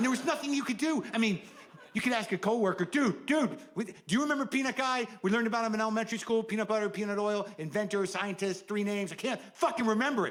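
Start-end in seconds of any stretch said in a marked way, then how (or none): 2.8-10.3 put-on, acted-out loud yelling. Acting out asking a coworker about Peanut Guy, retelling yelling at a coworker. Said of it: "Why are you yelling?".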